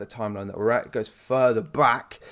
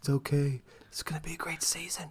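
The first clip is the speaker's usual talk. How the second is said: much softer, soothing whisper. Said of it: "almost gave me a bit of Trump there".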